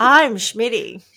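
polished TV news anchor delivery. Co-host re-introduces themselves to listeners; 60 Minutes news anchor voice. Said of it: "That sounded very 60 Minutes".

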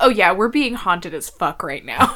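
casual, offhand, nonchalant, unbothered tone. Retelling how Rial told the inspectors about the witch: imitating Rial's nonchalant tone. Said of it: "just so nonchalant about it".

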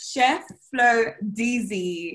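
very slow, careful, deliberate enunciation.

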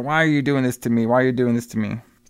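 ordinary delivery

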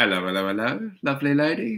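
put-on, old-school English comedy accent. Explaining how a clue should sound, a bit like Benny Hill. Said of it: "a bit like Benny Hill".

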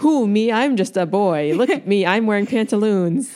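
slow, deliberate, measured speaking. Retelling a scene, imitating Arya: imitating Arya. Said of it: "And she's like".

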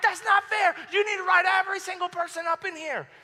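mock furious protesting yell, high-pitched. Speaker recalls getting a silent lunch, retelling own angry yelling. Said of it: "I'm yelling".

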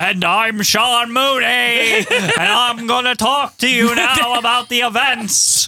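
booming, strange voice, very slow and drawn out. Mocking an announcer's odd delivery after asking what his voice is: loud weird Sean Mooney voice. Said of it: "What the fuck is his voice?".

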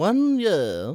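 put-on grandmother-like elderly woman voice. Imitating a grandmother saying year: imitating grandmother's King's English. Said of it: "she'll go".

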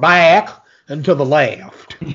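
exaggerated, bad, slow, drawn-out cartoon southern drawl. Quoting a line from a film in a bad Foghorn Leghorn southern drawl. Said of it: "he does it in such a bad southern accent. That sounds like Foghorn Leghorn".

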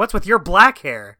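sharp, snappy, touchy, irritated tone. Retelling a character's reply to a question about his hair: imitating a snappy retort. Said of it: "get snappy about it".

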